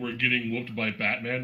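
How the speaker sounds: plain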